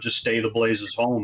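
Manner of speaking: ordinary talk, nothing marked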